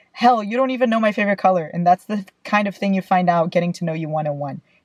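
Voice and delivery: ordinary talk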